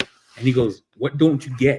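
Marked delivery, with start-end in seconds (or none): 1.0-1.8 mimicked annoyed, angry put-on voice. Showing how Jamie sounds when he gets pissed: imitating Jamie getting pissed. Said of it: "You know how he gets real pissed?".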